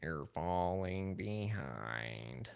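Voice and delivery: soft, mean cartoon secretary voice. Identifying the voice just done, repeating it in Monsters Inc mean secretary voice. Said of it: "from the is it Miss Gretchen or something from Monsters Inc?".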